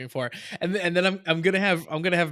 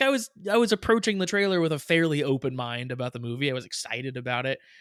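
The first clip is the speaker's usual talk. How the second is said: plain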